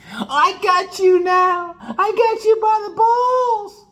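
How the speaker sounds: booming, spelled out, very high, very slow. Acting out what a girl secretly says when proposed to: extra loud imitation. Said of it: "I say that extra loud".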